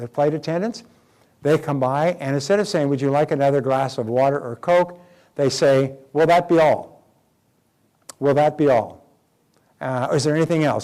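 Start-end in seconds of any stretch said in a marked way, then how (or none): 6.1-10.8 mock curt tone with slight edge. Retelling how flight attendants ask passengers, mimicking a slightly edgy attendant. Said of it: "with just a little bit of an edge".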